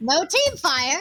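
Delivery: automated system announcer voice, machine-like readout. Voicing a gun's automated message after a missed shot: automated Doctor Opportunity voice. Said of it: "an automated Doctor Opportunity voice going".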